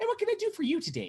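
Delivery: very high, squeaky woman's voice. Game master voicing a woman greeting visitors at the Hall of Justice, high-pitched squeaky woman voice. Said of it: "a very high pitched, squeaky woman".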